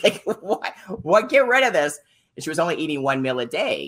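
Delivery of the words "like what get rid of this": mock yelling, very high and very drawn out. Retelling how a mother on the phone yelled at the speaker: retelling her yelling. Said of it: "She's like yelling at me".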